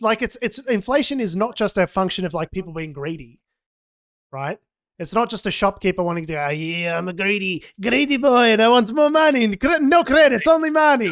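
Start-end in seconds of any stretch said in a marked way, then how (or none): 6.5-11.1 alien voice, higher and louder. Explaining inflation, acting out a greedy shopkeeper in a Watto voice. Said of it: "Why did you go full Watto?".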